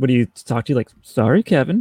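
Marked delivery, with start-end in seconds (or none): 1.0-1.8 snooty talking-car voice, said down the nose. Discussing famous TV vehicles, a guest does KITT's snooty voice impression. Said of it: "in his snooty voice".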